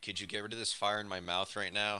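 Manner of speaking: plain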